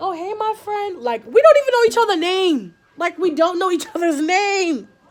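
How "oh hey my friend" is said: put-on high, slow little-kid voice. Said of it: "she's like".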